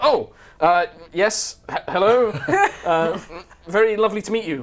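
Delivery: awkward, very high, loud, slow stammer. Voicing Nalistri being hugged after an awkward handshake: Nalistri voice, awkward. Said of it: "He's like".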